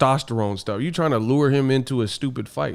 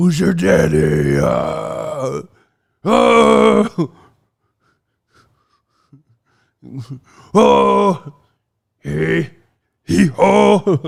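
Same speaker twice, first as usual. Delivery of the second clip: loud, creaky caveman grunts with long drawn-out oh; 4 semitones higher, 6 dB louder than usual. Mocking a boxer's noises by acting them out, in a caveman voice. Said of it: "you just sound like a fucking caveman".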